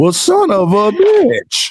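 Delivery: very slow drawn-out voice. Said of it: "when you hear somebody go".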